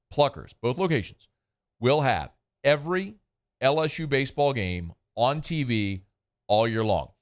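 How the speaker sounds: slow, deliberate, every word given its space. Repeating an announcement for listeners, say it again slowly. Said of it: "Let me say that again slowly".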